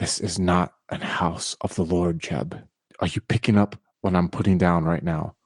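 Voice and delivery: hushed, half-whispered voice. Playing a character half-whispering a warning into a friend's ear in church: half-whispering in character. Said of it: "And I whisper in his ear".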